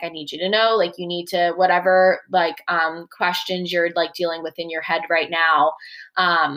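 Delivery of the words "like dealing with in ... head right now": ordinary talk, nothing marked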